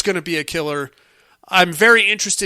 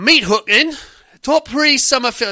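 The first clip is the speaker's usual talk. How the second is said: full-on put-on London Cockney accent, pitched up; 6 semitones higher than usual. Reading an email segment title, meant as Australian: put-on Cockney accent. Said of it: "That's Cockney. That is total Cockney".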